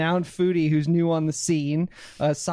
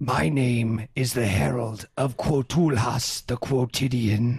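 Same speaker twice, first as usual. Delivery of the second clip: low, slow, menacing, threatening growl; 5 semitones lower than usual. A disembodied voice announces itself to a player character, growling Herald of Quotulhas. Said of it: "He growls very menacingly, / He growls very menacingly, / He growls very menacingly, / You can't tell what this disembodied voice is talking to".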